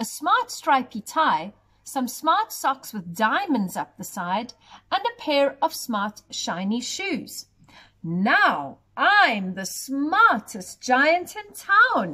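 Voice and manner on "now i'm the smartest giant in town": pleased, proud, slow, savouring every word. Narrator reads a giant speaking after buying new clothes; proudly. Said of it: "he said proudly".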